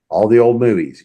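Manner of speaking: ordinary talk, nothing marked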